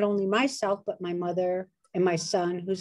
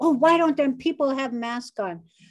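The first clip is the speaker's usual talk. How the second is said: mock, high-pitched, really angry griping; 5 semitones higher than usual. Retelling how mom complains about people without masks: imitating mom getting mad. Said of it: "she gets real mad".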